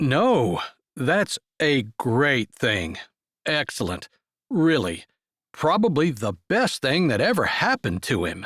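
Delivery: laid-on fake sarcasm with swooping tone. [name] answers Eleanor's pointed question about Franklin getting hitched, in a fake sarcastic voice. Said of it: "He said it in a fake sarcastic voice".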